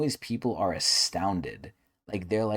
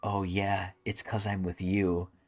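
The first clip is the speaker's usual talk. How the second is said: slow, cringey, fake put-on voice. Retelling what someone said in a clip, imitating his cringe put-on voice. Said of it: "he does, like, a voice".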